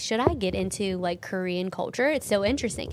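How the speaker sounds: ordinary delivery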